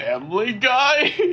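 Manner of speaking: play-acted, very high, nervous little voice. Retelling how the last person broke a long silence: imitating a nervous voice.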